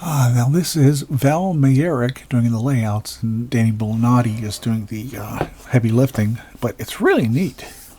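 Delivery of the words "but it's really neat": excited voice breaking, high crack. Speaker describing a comic's artists, voice cracking with excitement. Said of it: "Listen to my voice crack".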